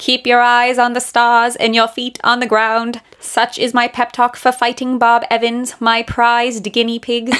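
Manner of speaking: affected, put-on mid-Atlantic accent speech. Imagining a man giving a pep talk to a guinea pig, mid-atlantic accent. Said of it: "with his like mid-Atlantic accent".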